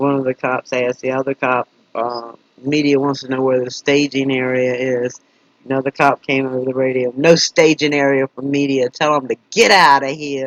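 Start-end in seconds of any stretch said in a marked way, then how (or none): 7.2-10.5 put-on loud New Jersey accent. Retelling a cop's radio reply about the media, in a New Jersey accent. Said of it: "he said it with a like a with a New Jersey accent".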